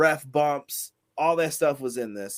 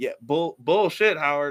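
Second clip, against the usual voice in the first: normal talking voice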